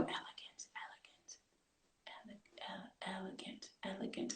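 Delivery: hushed whisper, word repeated under the breath. Retelling how a daughter practiced a new word: imitating Naya whispering under breath. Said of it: "under her breath going".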